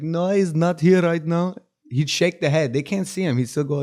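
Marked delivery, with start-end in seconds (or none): 0.0-1.6 put-on Indian accent, higher-pitched and slow. Retelling how their dad answered the phone; dad's put-on Indian accent. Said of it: "do an Indian accent".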